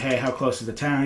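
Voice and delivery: ordinary talk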